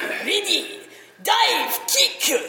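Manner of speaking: exaggerated put-on Japanese accent. Describing a game narrated by a Shaolin master, stereotypical Japanese accent. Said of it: "in the absolute stereotypical Japanese voice".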